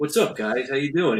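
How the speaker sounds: cool, collected, very measured, soft voice. Imitating a friend's online greeting: imitating Rob, calm and measured. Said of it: "he's all, like, calm and collected and, like, very measured".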